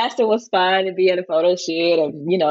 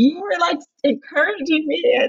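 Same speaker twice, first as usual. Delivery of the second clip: very high, choked-up voice on the verge of tears; 10 semitones higher than usual. Welcoming Jenna, the speaker addresses her directly, choking up and teary. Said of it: "Oh, geez, I shouldn't cry".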